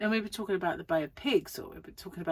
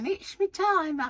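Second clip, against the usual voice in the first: put-on squeaky, very high old-woman voice; 11 semitones higher, 4 dB louder than usual. Acting out a woman ringing up after messing up her timer, as a Missus Wilkins impression. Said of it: "she'd ring up and go".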